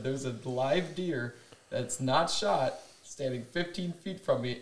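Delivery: ordinary delivery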